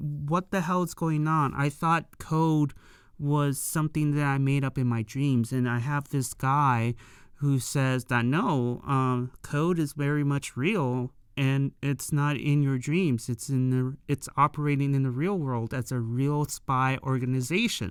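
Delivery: plain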